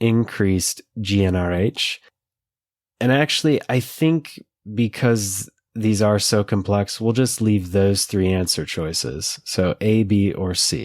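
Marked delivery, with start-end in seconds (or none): 0.0-2.0 slow, deliberate reading pace. Reading complicated multiple-choice answer options aloud: reading slowly. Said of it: "I'm gonna read 'em slow".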